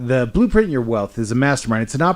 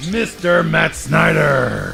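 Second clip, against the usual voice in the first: monster truck show announcer voice, higher; 3 semitones higher than usual. Introducing the co-host by name: monster truck announcer voice. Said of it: "the monster truck announcer voice".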